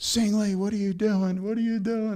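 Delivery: very high, screaming yell. Retelling how an assistant called out to you after some 30 years, imitating Joe Grace Jr. screaming. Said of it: "and he's screaming".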